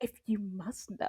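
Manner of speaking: very soft, hushed, soft-spoken whisper. Retelling what a friend said about her kissing: imitating a soft-spoken reply. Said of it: "she was so soft-spoken about it too".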